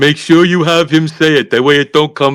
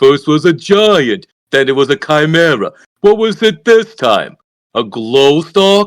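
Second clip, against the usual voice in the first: teasing, scoffing, mocking sarcasm with swooping pitch. Voicing a character who mocks another's fanciful excuses: sarcastic in character. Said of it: "I was being sarcastic".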